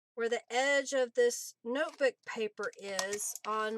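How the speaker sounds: ordinary delivery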